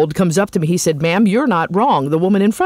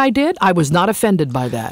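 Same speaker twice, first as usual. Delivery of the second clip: usual speaking voice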